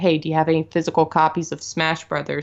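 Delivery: plain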